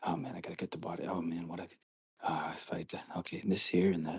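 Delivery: very hushed, quiet, muttered whisper. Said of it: "whispering to himself".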